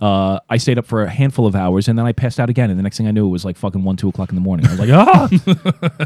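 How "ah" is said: high, loud, panicked, startled yell. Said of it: "Wake up in a panic".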